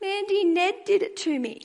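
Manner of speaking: small, sweet, gentle high voice, slow. Retelling what the niece called back from the couch: sweet little voice. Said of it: "her sweet little voice calls back to me".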